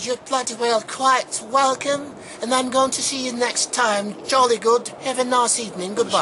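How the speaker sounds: put-on British accent. Replying to the host's thanks and saying goodbye, in a British accent. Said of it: "I'll say this in my British accent".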